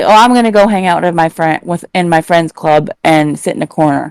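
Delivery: plain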